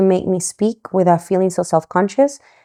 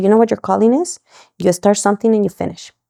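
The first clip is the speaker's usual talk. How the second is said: normal talking voice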